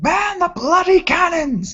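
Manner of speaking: put-on very high-pitched yelling with an Irish accent. In a role-play attack by TIE fighters, Vron shouts down to Fenric: Vron shouting in character. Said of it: "Vron looks over his shoulder and shouts".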